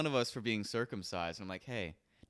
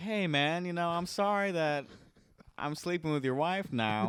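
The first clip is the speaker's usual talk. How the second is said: very high, slow, drawn-out apologetic tone; 9 semitones higher, 5 dB louder than usual. Retelling a movie scene, quoting a character taking another's wife: imitating an apologetic tone. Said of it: "being apologetic about taking his wife".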